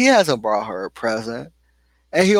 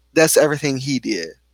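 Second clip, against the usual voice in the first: usual speaking voice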